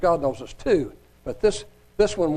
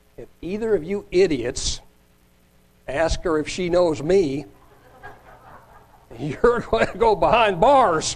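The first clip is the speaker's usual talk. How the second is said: ordinary delivery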